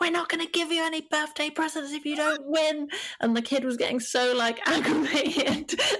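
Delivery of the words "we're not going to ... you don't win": mock, high, shouted yelling. Recalling a family at a boxing match shouting at a kid; retelling a family's shouting. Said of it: "their family were shouting at the kid like".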